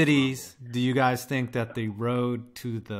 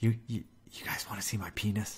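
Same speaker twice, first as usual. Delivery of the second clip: put-on creepy uncle voice, quieter; 3 semitones lower, 9 dB quieter than usual. Teasing a chat member by acting him out: imitating Tree as creepy uncle. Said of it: "that's how I imagine Tree tonight".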